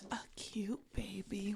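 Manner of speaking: acted eerie, unsettling, creepy tone. Imitating another speaker's creepy way of saying a line: imitating a creepy tone. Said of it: "you didn't say it in that tone".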